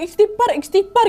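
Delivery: high-pitched, panicked, urgent voice.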